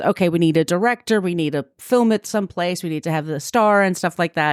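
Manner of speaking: normal talking voice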